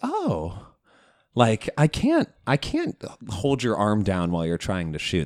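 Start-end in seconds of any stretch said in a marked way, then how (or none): 0.0-3.0 incredulous, innocent-sounding, swooping fake surprise. Retelling how a fouling player reacted to calls: imitating fake surprise. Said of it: "a surprise to him".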